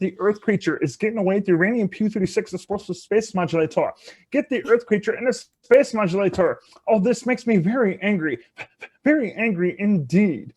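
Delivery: high cartoon space alien voice. Asked to do more impressions, doing a Marvin the Martian voice. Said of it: "I do Marvin the Martian from Looney Tunes".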